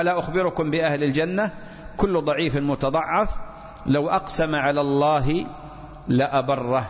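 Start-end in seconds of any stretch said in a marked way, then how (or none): none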